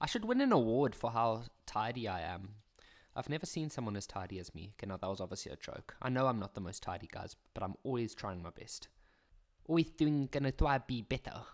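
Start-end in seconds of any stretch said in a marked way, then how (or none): 9.7-11.4 little goody-goody nerd voice. Addressing viewers, in a goody two shoes nerd voice. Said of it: "I don't know what accent I was even going for there".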